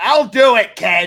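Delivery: heavy, glass-cutting Boston accent, very loud. Speaker offers to talk in a boston accent for a listener: thick boston accent. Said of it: "talk in a Boston accent that can cut glass".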